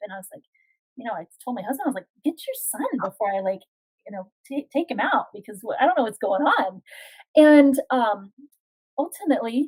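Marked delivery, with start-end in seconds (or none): none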